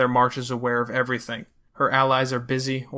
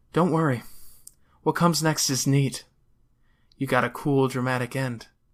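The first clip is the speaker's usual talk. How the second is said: voiced, confiding stage whisper, close in. Narrator reads a woman's words to a girl: half-whispering. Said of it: "She whispers".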